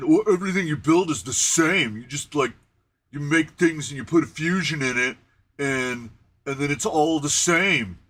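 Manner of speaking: play-acted sarcastic voice dripping with ridicule. Retelling what he said, in a mocking put-on voice. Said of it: "I'm gonna do a voice because mark uh, mockery and sarcasm".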